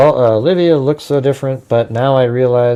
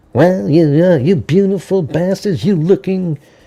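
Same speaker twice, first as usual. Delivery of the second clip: high, whiny, nasal, sneering mocking voice; 5 semitones higher than usual. Mocking another commentator's opening line: nasal-sounding imitation of a man. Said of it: "nasally sounding".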